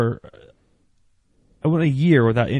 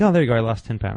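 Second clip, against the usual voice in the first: plain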